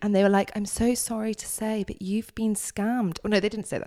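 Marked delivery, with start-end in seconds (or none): 0.5-3.2 calm, soothing customer-service voice, soft and slow. Retelling what someone from Lloyd's said, in a soothing receptionist voice. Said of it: "they put on a really like receptionist-y voice".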